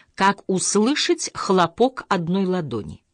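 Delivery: ordinary delivery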